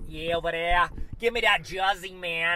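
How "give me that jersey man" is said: loud put-on Brooklyn accent. Speaker, talking about a buddy and jerseys, tries a Brooklyn accent attempt. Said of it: "That's my best Brooklyn accent".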